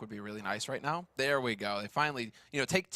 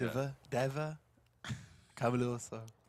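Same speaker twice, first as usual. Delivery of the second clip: put-on Danish accent. Joking about the name deva, saying it in a danish accent. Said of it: "like a Danish accent".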